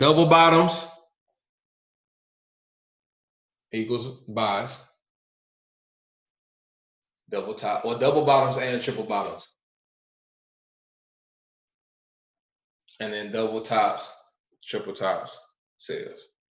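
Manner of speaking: slow, deliberate, spelled-out delivery. Repeating a trading rule after a listener asks to hear it again: slower pace. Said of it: "You said it again, slower".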